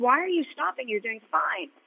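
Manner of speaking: mock, yelled, urgent-sounding call. Retelling team members yelling at a rider who stopped halfway: imitating people yelling. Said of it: "are yelling".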